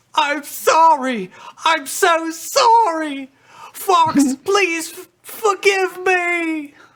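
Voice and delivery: high, violent sobbing, crying hard through every word. Delivering the next scripted line as the director asks: violent crying. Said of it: "so violently cry while you deliver it".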